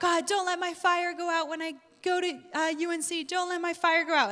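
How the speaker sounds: high-pitched crying out. Retelling crying out to god on the bed, re-enacting own yell. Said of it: "And that was what I was yelling".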